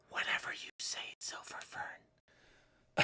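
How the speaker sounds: gentle, slow, soft, mocking whisper.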